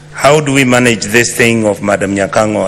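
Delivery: ordinary delivery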